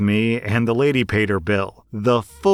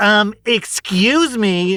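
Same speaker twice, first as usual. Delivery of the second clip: mock shrill, very high, loud yell; 11 semitones higher, 4 dB louder than usual. Retelling a woman yelling after she grabbed the bill, retelling her loud yell. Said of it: "she yelled, ... so loud".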